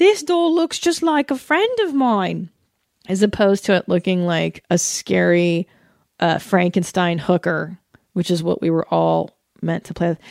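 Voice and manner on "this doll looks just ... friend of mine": put-on Tasmanian accent. Act out little girls playing with dolls, in a put-on Tasmanian accent. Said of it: "I'm doing a Tasmanian accent".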